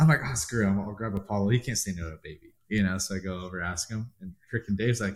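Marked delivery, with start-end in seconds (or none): none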